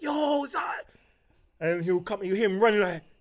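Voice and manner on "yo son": put-on shout, higher and louder. Retelling calling out to the son in another room: imitating a shout. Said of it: "I'll shout".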